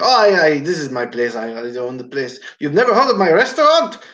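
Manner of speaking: put-on thick, heavy German accent. Retelling what a woman at an estate sale said, in a thick German accent. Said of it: "a thick German accent".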